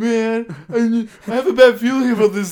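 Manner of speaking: drawn-out fake crying, very high and very loud. Retelling a movie scene where Scrubs asks to leave early, imitating Scrubs fake crying. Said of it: "Scrubs starts fake crying".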